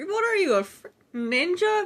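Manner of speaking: very high, put-on Australian accent. Retelling what an Australian person said to the speaker's dad; Australian accent. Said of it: "an Australian person just say".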